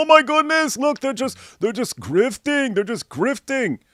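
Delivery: play-acted, babyish whining like a baby. Mocking critics who complain about paying for security: imitating whining like babies. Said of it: "you whine like babies".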